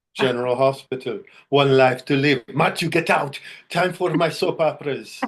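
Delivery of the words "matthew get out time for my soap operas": put-on thick Italian mamma accent, pitched up. Recalling his childhood, the speaker quotes his mom in a heavy Italian accent. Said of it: "Heavy Italian accent, my mom".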